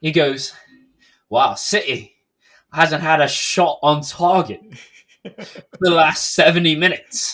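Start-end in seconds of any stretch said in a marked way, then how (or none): 1.3-7.3 put-on slight, slow, cheeky British accent. Quoting a commentator on the CBS broadcast, in a cheeky British voice. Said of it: "in his little cheeky British voice".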